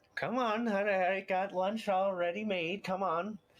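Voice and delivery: very high, brisk, coaxing voice. Game master voicing a halfling mother calling her son in for lunch: halfling mother shouting to her son. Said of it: "they're actually halflings. Um, and she's wading her way out there after her halfling son, / who is also wearing a kind of dress that she's kind of doing the hold up at the sides as she's wading throu".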